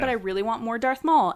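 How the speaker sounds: usual speaking voice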